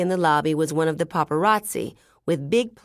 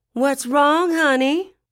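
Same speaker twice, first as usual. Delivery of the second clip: over-the-top, exaggerated feminine voice, very high pitched; 10 semitones higher, 4 dB louder than usual. A voice in the background of Johnny's call asks him: exaggerated feminine voice. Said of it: "an exaggerated feminine voice".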